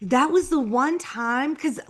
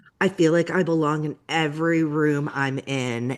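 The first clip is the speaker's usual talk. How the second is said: play-acted flat, very low deadpan delivery; 8 semitones lower than usual. Retelling what Amanda said when a producer asked if she felt intimidated: imitating Amanda's deadpan line. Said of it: "She said it, like, deadpan".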